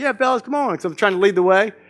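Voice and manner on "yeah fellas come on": play-acted, raised, pitched-up half shout. Retelling calling the kids from the puddles to the beach: retelling a shout. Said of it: "I'm kinda shouting".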